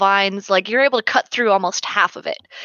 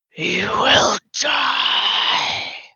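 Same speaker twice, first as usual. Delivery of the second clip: hoarse, raspy, whispery creature voice; 2 semitones higher than usual. Narrating a scene, something creaks its head round to look at you: hoarse, whispery voice. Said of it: "this hoarse, whispery voice says".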